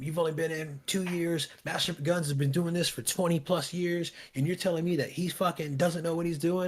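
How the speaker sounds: furious, angry berating tirade. Retelling how a warrant officer scolded the speaker: imitating someone berating. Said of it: "He just starts laying into me".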